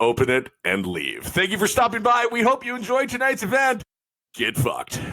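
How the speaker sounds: animated radio host announcer voice. Opening the podcast with its intro: announcer voice. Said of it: "You do have that great announcer voice".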